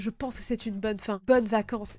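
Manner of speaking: ordinary delivery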